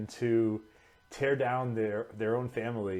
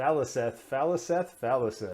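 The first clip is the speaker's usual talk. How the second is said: ordinary talk, nothing marked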